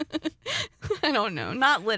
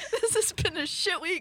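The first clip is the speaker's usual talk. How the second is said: crying with laughter, higher pitched; 7 semitones higher than usual. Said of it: "I'm just gonna laugh and cry and snot".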